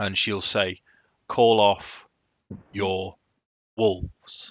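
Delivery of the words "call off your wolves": firm, stern, authoritative tone. Ez steps forward and addresses a woman, authoritative, stern tone. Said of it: "in quite an authoritative, stern tone".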